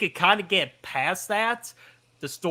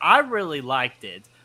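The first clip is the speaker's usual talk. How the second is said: plain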